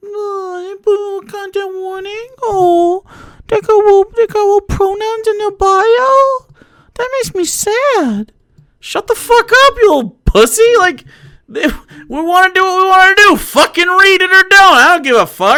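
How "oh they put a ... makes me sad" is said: mocking crybaby whine, "bio" drawn out. Mocking people who complain about content warnings: imitating whiny complainers. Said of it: "why are they so fucking whiny?".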